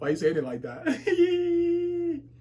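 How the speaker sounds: high, slow speech laughing through words.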